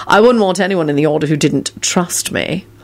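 ordinary talk

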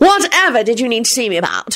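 clearly annoyed, irritated, rising pitch. A visitor whose visit is being ignored bursts in, irritated. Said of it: "clearly irritated".

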